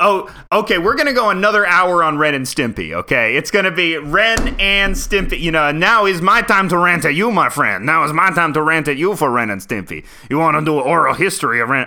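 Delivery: put-on Cajun accent, loud, high, ranting. Ranting at their conversation partner, in a Cajun accent. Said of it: "I don't know why I've gone Cajun for this".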